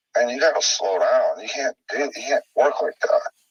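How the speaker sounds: ordinary talk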